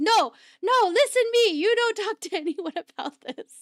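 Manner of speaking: mock urgent scolding. Retelling how they screamed at him for talking about the transaction: retelling people screaming at him. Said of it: "they just start screaming at him".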